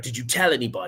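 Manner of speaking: attempted put-on Australian accent, inconsistent. Retelling a conversation about a Bigfoot sighting, in an attempted Australian accent. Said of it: "so that accent went in and out".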